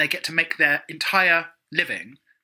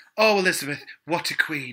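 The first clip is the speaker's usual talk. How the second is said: mock earnest, heartfelt grief. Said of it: "really, like, talking from the heart".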